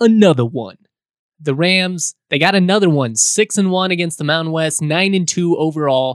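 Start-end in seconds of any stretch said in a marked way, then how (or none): 0.0-0.8 mock hype announcer voice. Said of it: "in your best [name] voice".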